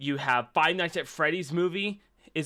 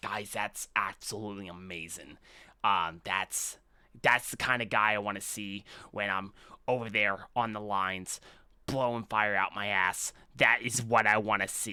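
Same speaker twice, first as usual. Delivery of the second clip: very low, hushed, slightly raspy character voice; 8 semitones lower, 5 dB quieter than usual. Show others how a guy who does drugs sounds, in a little raspy put-on voice. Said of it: "It's like a little raspy".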